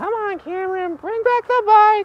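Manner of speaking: very high, loud, shrieking screaming yell. Speaker retells a woman yelling at him, imitating her screaming. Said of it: "She was screaming, she was yelling. She was like".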